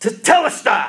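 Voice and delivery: loud, ringing, triumphant cry. Speaker quoting the one who defeated death, retelling a loud cry. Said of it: "cry with a loud voice".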